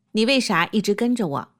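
ordinary talk, nothing marked

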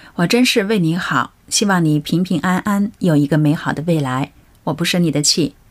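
usual speaking voice

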